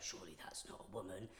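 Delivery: imitated mutter under breath. Recounting what two people said entering the women's toilets, muttering under their breath. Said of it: "I heard them under their breath go".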